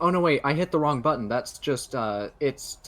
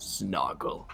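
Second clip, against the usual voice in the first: muttered under breath, much lower and quieter; 12 semitones higher, 10 dB louder than usual. Arguing with a man willing to die for his cause, muttering under your breath. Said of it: "mutter under my breath".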